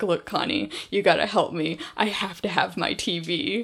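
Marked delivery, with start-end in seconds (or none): none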